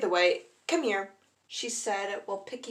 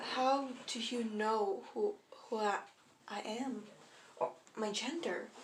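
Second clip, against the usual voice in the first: put-on soft, trembling, shaky, stumbling voice; 7 dB quieter than usual. Reading a story, the narrator answers a kneeling woman in a shaky voice. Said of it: "In in a shaky voice".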